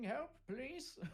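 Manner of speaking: high-pitched yelling, calling out. Answering the game master in character while being attacked: yelling for help. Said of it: "I'm yelling".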